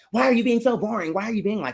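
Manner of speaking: exasperated, fed-up, annoyed yelling. Acting out a yell at him that the speaker would never do, mock yelling. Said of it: "I wouldn't just yell at him like".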